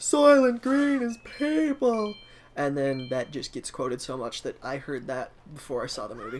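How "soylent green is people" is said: very high, drawn-out shout. Retelling the twist line at the end of a movie: imitating a shout. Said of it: "And he shouts".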